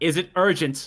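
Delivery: loud call echoing in a reverberant space. Voicing a chaplain calling out toward the door: calling out, echoing. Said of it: "he calls out with his voice echoing".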